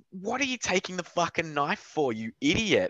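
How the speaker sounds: screaming in a very high, shrill voice. Acting out yelling at a show character while watching: imitating screaming at a character. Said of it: "you're just screaming at him, like".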